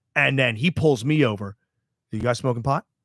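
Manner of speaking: ordinary talk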